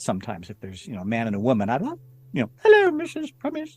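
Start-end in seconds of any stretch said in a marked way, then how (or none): 2.6-3.8 shrill, very high, loud, squeaky woman's voice. Showing how a woman's voice is done in audiobooks: Monty Python women's voice. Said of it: "Monty Python, you know, women's voices".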